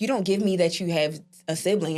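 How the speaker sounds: ordinary delivery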